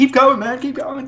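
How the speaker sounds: very high, stubborn, undaunted, pushed out. Describing a villain who would not die, imitating the man from Monty Python. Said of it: "he's like that man from Monty Python".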